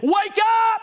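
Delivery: tearful crying shout at top of voice, very high. Recalling a church brother's interpretation of tongues, retelling a shouted cry. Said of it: "shouting and crying at the top of his voice".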